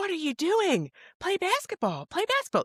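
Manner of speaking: very high-pitched screaming. Retelling how a coach screamed at a boy who stopped to help: imitating a screaming coach. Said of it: "the coach is screaming".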